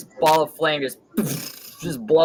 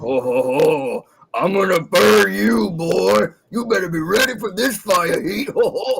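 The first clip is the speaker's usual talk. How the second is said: slow, furious, enraged giant voice; 4 semitones higher, 3 dB louder than usual. Voicing a summoned flaming giant glaring at a foe: enraged fire giant voice. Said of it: "it stares at him like".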